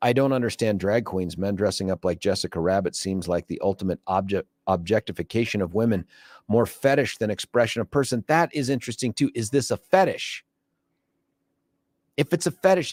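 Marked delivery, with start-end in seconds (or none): none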